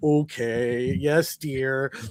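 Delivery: indulgent, doting, fond tone with a stretched "okay". Retelling how Zeus answers Athena's request, imitating Zeus indulging Athena. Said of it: "he's just spoiling Athena".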